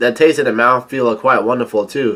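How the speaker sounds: plain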